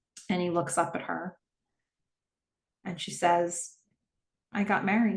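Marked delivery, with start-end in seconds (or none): 4.5-5.1 put-on sweet, innocent voice. Retelling what a woman says to a man after a pause, mimicking a sweet, innocent voice. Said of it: "In such like a sweet, ... just a sweet, innocent voice".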